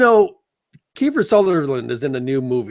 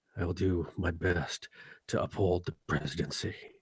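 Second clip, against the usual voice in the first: very soft, hushed murmur, almost under the breath; 8 semitones lower, 16 dB quieter than usual. Mocking an actor for playing the same role: Jack Bauer impression. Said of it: "Jack Bauer's all like".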